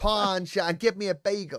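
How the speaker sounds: put-on New York accent. Told to try saying it like a New Yorker, in a New York accent. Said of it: "Try and say it like a New Yorker".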